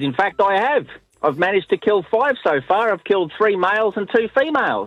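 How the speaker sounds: puffed-up, haughty voice. Retelling a man answering a woman's snide question: retelling him with some tone. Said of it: "with a bit of tone in his voice".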